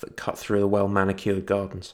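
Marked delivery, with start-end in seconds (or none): none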